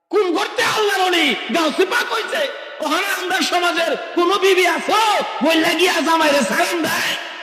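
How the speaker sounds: high, loud, fervent preacher-like shout.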